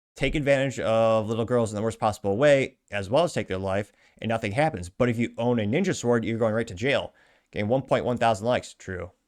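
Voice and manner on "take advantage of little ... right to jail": ordinary delivery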